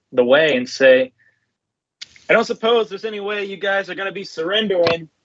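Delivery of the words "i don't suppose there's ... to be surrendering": pitched-up shout carrying over a distance. Calling across to an enemy ship thirty feet away, shouting across. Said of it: "I'm gonna shout across the".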